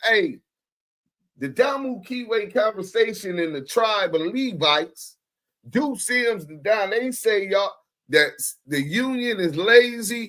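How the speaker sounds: ordinary delivery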